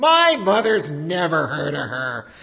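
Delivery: loud, mocking little girl voice.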